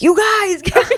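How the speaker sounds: play-acted very high, shrill yell. Retelling being led off on a horse, calling to friends: imitating own yelling. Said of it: "yelling for my friends".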